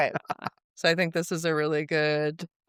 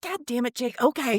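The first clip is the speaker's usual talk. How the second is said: put-on Southern accent; 7 semitones higher than usual. Imitating a friend's mom reacting to a confession: Southern accent. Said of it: "giving her a real Southern accent".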